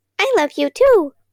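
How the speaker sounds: tiny, squeaky, high-pitched mouse voice. Narrator making amends at bedtime, voice from the floor: tiny mouse voice. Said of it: "I used a tiny mouse voice coming from the floor".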